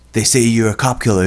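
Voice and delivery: put-on Boston accent. Retelling a scene's dialogue, voicing the woman's line in a boston accent. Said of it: "She has this Boston accent or something".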